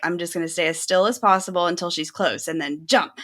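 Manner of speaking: ordinary delivery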